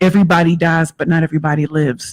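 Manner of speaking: plain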